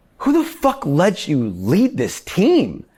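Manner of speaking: livid, very high-pitched, slow furious outburst. Retelling a kitchen mishap, the speaker quotes the chef: imitating the chef's anger. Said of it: "He was right to be that mad".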